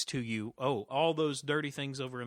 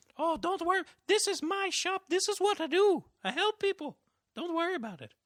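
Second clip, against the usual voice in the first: put-on very high, raised old Irish woman voice; 5 dB louder than usual. Playing a shop owner telling a worried visitor not to worry, in an old Irish lady accent. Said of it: "change of accent ... redneck to Irish old, you know, Irish lady".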